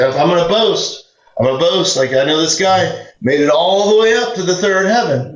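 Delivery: sarcastic bragging tone. Reading the boast again, letting it be sarcastic: reading it sarcastically. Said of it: "if you let it be sarcastic".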